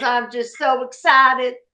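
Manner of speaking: put-on high, very strong New Orleans accent. Speaker recalls the teacher coming up to greet them: Miss Jolene's New Orleans accent. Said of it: "she had a very New Orleans accent".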